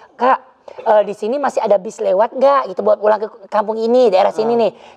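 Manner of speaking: plain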